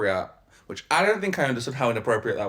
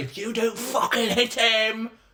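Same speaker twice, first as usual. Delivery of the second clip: mock very high, shrill, drawn-out shrieking; 10 semitones higher than usual. Retelling how mum yelled during a nursery fight: imitating mum screaming. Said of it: "screamed at me".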